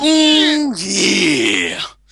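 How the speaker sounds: loud, swooping wrestler shout with drawn-out oh. Asking the group the ultimate question in Randy Savage voice. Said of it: "I'm gonna do it in my Man Randy Savage voice".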